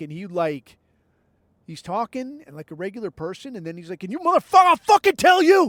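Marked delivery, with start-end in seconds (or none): 4.0-5.7 shrieking, rising, shrill, deafening, over-the-top outburst. Act out a dude who talks like a regular person, then imitating a sudden over-the-top outburst. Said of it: "like just zap, like just over the fucking top, like launch".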